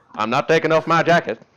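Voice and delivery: put-on loud Southern accent. Telling a story, the speaker quotes a Colonel Sanders Southern accent. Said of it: "He sounds like he's from Texas".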